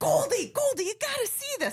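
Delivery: very high, thrilled, excited yell. Act out the man who grabbed your hand as you bawled, calling to Goldie, retelling a yell. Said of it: "And he's yelling".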